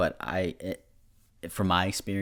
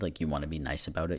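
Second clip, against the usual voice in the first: ordinary talk, nothing marked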